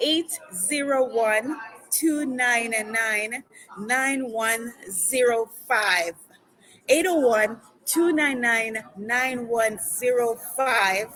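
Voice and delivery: slow, deliberate reading, each digit given its own space. A radio host giving listeners the number to text, saying it slowly. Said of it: "I'm going to say it slowly".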